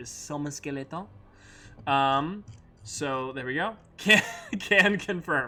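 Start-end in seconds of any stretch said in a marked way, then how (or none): 0.1-1.1 bad, over-the-top, fake French accent. Following the only allowed way to say one phrase, fake bad French accent. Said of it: "the only way that you can say Summon Skeleton is like with a fake bad French accent".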